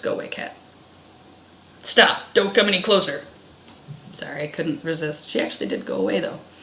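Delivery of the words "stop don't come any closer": put-on firm, no-nonsense, commanding big girl voice. Demonstrating warning off someone approaching within thirty feet, in a big girl voice. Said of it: "I've deployed my big girl voice".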